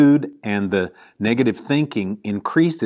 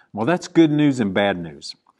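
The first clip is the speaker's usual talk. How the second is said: ordinary talk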